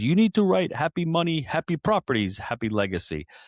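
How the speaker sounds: put-on Japanese-accented English. Retelling what the Happy Money guru said on the show, in Ken Honda's Japanese accent. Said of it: "in his Japanese accent".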